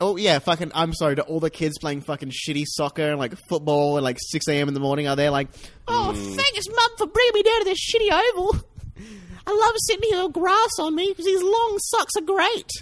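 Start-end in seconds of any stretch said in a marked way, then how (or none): 5.9-12.7 put-on very high-pitched child's voice. Imitating a kid at early-morning sports thanking mum: kid voice. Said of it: "This is my kid voice".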